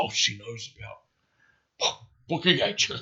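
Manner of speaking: hushed, condescending, snide whisper under the breath. Retelling his first reaction to her question: imitating an under-breath remark. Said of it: "he turns to T under his breath".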